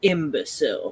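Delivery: deep, rough, throaty, guttural, gravel-laden voice. Narrating a game scene, a figure who sent Terry flying speaks in a deep, guttural, gravelly voice. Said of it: "says in this deep, guttural, gravely like voice".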